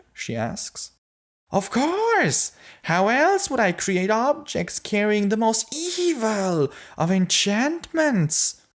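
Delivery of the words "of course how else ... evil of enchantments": very high little imp voice, "evil" stretched out. Narrator voicing the imp answering Novi's question, imp character voice. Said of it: "the imp says. / I'm going to show you my workshop, or as I like to call it, the Dread Forge." / They follow the little guy into the keep as he leads them up a flight of stairs into a room packed with".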